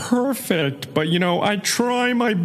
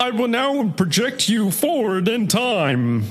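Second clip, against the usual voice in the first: put-on auto-tuned alien voice. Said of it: "my Marvin the Martian impression".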